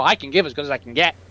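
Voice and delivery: geeky, bravado-filled delivery. Quoting a movie line with geeky bravado: Clark Kent voice. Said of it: "he says it in the Clark Kent voice".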